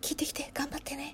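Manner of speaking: soft, small, hushed whisper.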